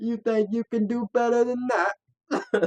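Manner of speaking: high, loud, put-on Australian accent.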